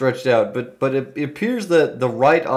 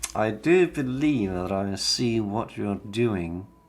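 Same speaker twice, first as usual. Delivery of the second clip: hushed half-whisper spoken close to the ear; 5 semitones lower, 8 dB quieter than usual. Describing a figure leaning close to your face, the speaker voices him half-whispering. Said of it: "he whispers in your ear".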